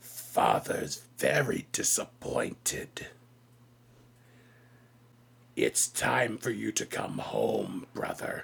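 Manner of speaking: menacing, beast-like creature voice. Voicing a tiger-headed creature confronting someone: tiger creature speaking menacingly. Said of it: "narrows its predator eyes at you and says".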